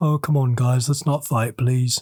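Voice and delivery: slow, nice, pleading delivery. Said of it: "And then [name] in the corner like".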